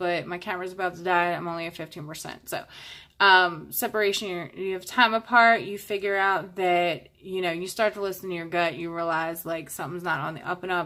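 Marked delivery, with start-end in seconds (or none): 0.0-2.5 fast, hurried, rushed speech. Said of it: "I'm sorry I'm talking fast".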